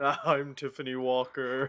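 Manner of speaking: put-on low voice. Introducing themselves at the start for Halloween, put-on low voice. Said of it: "Why do we both have low voices".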